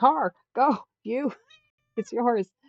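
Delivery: loud, high, drawn-out, swooping yell. Retelling yelling at the daughter's partner to go; retelling a yell. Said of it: "I'm yelling".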